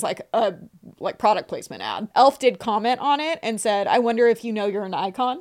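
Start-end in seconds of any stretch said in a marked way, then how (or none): none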